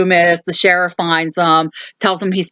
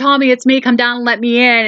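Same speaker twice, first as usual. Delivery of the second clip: mock urgent call rising up, high and light; 6 semitones higher than usual. Retelling a movie scene, calling up to be let in: imitating someone yelling. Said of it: "And Lori's yelling".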